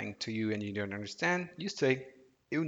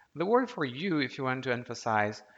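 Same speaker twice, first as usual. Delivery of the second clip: normal talking voice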